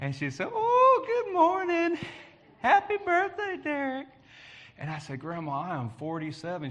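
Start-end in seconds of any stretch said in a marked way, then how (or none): 0.5-4.1 put-on very high Alabama grandmother voice and accent. Retelling a birthday phone call from his grandmother: Grandma Elkins's Alabama voice. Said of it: "with an Alabama voice".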